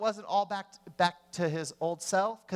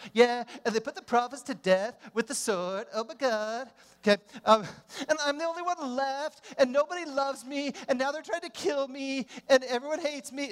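put-on high, whiny valley girl voice; 5 semitones higher than usual. Acting out Elijah's reply, in a mock whiny valley girl voice. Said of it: "I turned into a valley girl".

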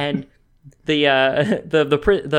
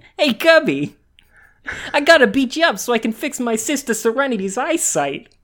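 Brooklyn tough-guy voice, pitched way up; 10 semitones higher than usual. Riffing with a friend about a character who talks like Joey Wheeler: Joey Wheeler voice. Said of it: "He talks like Joey Wheeler".

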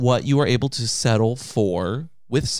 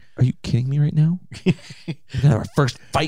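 mock-annoyed, pretend irritated tone. Acting out a staged bickering moment with a co-host, mock-annoyed tone. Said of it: "Don't use that tone of voice with me".

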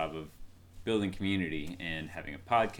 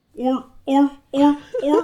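seal bark impression, higher and louder; 16 dB louder than usual. Answering what sound a seal makes: imitating a seal's bark. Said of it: "What sound does a seal make?".

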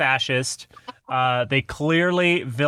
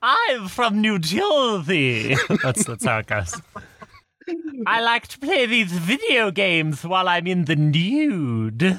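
high, swooping, sing-song put-on voice, "nude" drawn out; 5 semitones higher than usual. Asked to give a taste of it, a friend does another person's voice: imitating another person's voice. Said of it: "I did make [name] do your voice".

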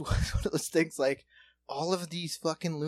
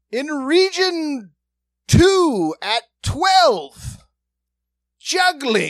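very loud, very high, slow plodding read-aloud; 10 semitones higher, 13 dB louder than usual. Retelling how they read after someone forgot a line, imitating slow reading. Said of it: "They just the slow reading".

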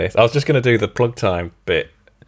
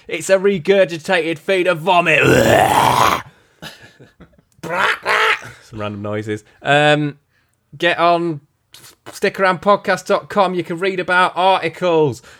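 raised-pitch ranting voice.

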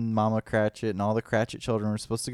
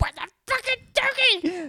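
very high-pitched, shrill distant yell. Retelling how an actor yelled offstage: imitating someone yelling. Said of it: "sits there and yells at all of us".

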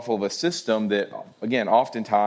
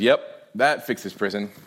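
mock, very deadpan, expressionless tone. Retelling a prison visit scene from a show: imitating Rosa Diaz deadpan. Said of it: "she goes in very deadpan".

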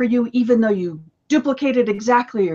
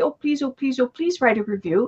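put-on imploring, repeated pleading and begging; 5 dB quieter than usual. Retelling asking people for book reviews: imitating someone begging. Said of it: "beg and plead and say".

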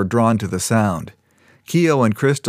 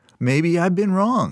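put-on earnest, sincere surprise, pitched up; 8 semitones higher than usual. Narrator reading Vengel's line, feigned sincere surprise. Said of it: "Vengel acted sincere and surprised".

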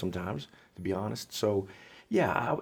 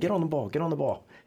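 mock yelling, pitched higher and slower; 7 semitones higher, 3 dB louder than usual. Retelling what the man yelled again at the girls in practice: retelling a yell. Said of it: "he yells again".

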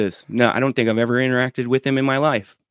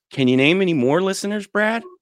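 mocking, scornful, derisive, pitched-up sarcastic jab; 6 semitones higher than usual. Retelling being asked to name more listeners after a shout-out: mock-derisive question. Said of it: "with just a derisive tone".

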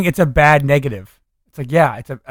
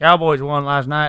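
put-on Texan accent. Imitating how Wes Anderson really talks, with a Texan accent. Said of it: "he has like a Texan accent".

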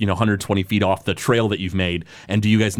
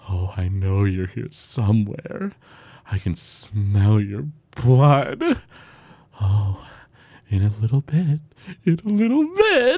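put-on creature voice, drawn out, swooping and slow. Narrating a creature tracking the listener's trail, the storyteller voices it: voicing the creature. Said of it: "And he goes".

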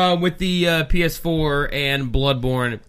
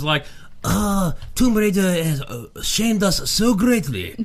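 poor put-on Japanese accent; 3 semitones higher than usual. Commenting on Tomb Raider in a bad fake Japanese accent. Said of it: "That was my Japanese".

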